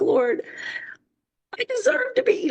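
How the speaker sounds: mock very high, tearful, crying plea. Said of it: "And I sat in the shower one night just crying".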